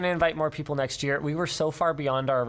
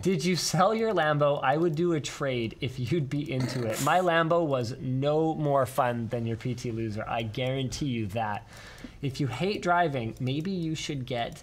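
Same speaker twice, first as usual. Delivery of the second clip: plain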